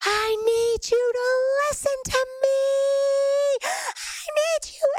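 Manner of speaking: put-on, very high, very slow, full-lung scream. Recalling clenching his hands with eyes closed, retelling a scream. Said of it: "just started screaming".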